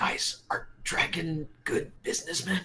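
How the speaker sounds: slow, hushed, drawn-out whisper. Voicing Twinkie asking the others a question: whispering. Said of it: "Twinkie just whispers".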